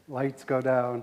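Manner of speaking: ordinary talk, nothing marked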